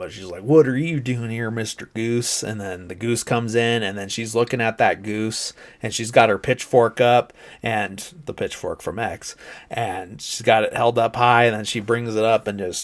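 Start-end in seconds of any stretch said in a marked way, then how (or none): 0.4-2.4 Southern drawl laid on heavy, thick and put-on. Retelling a woman with a thick Southern accent addressing a goose: thick put-on Southern accent. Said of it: "she's really putting it on".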